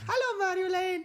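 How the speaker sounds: put-on very high, very loud, shrill non-native English accent. Showing how their mom says hello, imitating mom's accent. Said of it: "That's a good accent".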